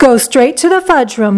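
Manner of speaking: ordinary delivery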